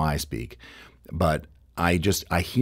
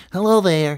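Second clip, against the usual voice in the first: very high, loud, projected puppet character voice; 13 semitones higher, 7 dB louder than usual. Showing the vocal trigger used for Big Bird: Big Bird voice. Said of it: "that's how I will, I'll get into his voice".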